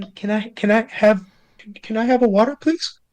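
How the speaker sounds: high, very nervous, stumbling stammer. Narrating a kobold who asks a warrior for water, very nervous. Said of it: "very nervously says".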